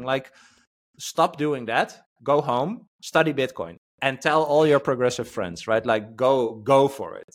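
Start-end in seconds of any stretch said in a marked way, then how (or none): none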